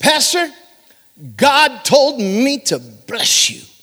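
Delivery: high, intoned delivery in a church-service tune. Retelling what a man told the pastor, in Brother Wilson's tuned-up churchy voice. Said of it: "He tuned up".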